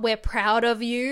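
ordinary talk, nothing marked

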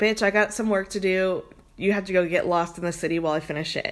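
ordinary delivery

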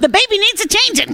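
mock nagging tone.

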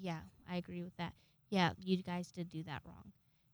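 calm, even tone. Recounting how someone agreed with the speaker's explanation, retelling a calm reply. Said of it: "very calmly".

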